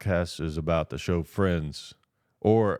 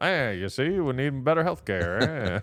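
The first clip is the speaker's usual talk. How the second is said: put-on old-time 1930s movie gangster voice; 6 semitones higher than usual. Showing how a 1930s gangster would give a speech, in a 1930s gangster voice. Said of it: "if a nineteen thirties gangster is like giving like a speech".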